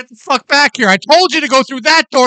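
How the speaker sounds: furious, high, loud yelling. Telling how she suddenly turned on them, retelling a woman's yelling. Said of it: "she just turned into like Mister Hyde".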